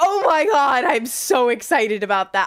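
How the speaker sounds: loud, gushing, excited outburst. Answering a question about the new Nintendo Direct: loud excited outburst. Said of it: "that might have been really loud".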